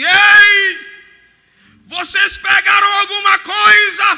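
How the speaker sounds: slow, high, drawn-out calling out. Retelling a man on the shore calling to a boat: imitating a shout from the shore. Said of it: "ele dá um grito lá na areia".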